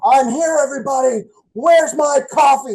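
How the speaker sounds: very high, loud, drawn-out pro-wrestler voice. Retelling a friend walking into a Dunkin' Donuts: imitating Sherman as a wrestling character. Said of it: "he'd act like he was this wrestling character".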